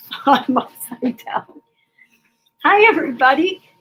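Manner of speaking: talking while cracking up laughing. Greeting viewers at the start of a live show, laughing while talking. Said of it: "cracking up 'cause I was upside down".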